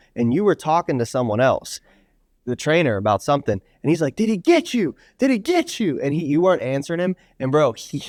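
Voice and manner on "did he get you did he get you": mock heated, insistent yelling, very high-pitched. Retelling how he kept pressing Alex for an answer, imitating heated yelling. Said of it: "he was so heated".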